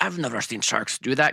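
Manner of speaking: put-on loose South African accent. Retelling what fishermen in a shark movie say: vague South African accent. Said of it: "this vague, not South African accent".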